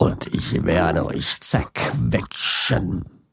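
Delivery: whispered, breathy, sinister evil monster voice. Demonstrating character voices, the speaker switches to a monster voice. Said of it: "Jetzt kommt das Monster".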